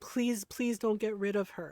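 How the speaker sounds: put-on serious, earnest, pleading, begging tone. Retelling a brother begging a grandmother: imitating someone begging. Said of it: "he begged my grandmother".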